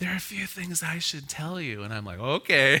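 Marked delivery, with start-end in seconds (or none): 0.0-1.8 hushed, quieter, mock-conspiratorial voice. Retelling what Daniel's mother said privately in the kitchen, retelling in a hushed voice. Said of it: "that kind of hushed voice".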